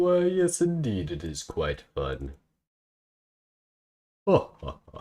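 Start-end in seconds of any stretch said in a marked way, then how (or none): 0.0-2.3 put-on upper-class British accent, posh and sing-song. Tutorial speaker poking fun at the British: British posh voice. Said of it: "British posh voice".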